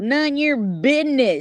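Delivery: Arkansas accent impression. Retelling what a man said, the speaker imitates him with an Arkansas accent. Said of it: "That's how they talk in Arkansas".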